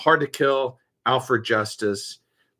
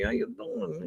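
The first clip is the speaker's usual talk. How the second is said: put-on sleazy New York accent, very high-pitched; 5 semitones higher than usual. Describing a new character someone plays, doing his greeting: sleazy New York guy voice. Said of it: "playing like this sleazy New York guy".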